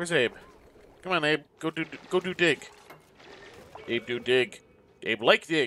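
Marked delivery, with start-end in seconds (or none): 1.6-5.7 put-on, broken caveman talk. Urging a slow worker to go dig: mock caveman talk. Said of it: "I suddenly went all caveman there".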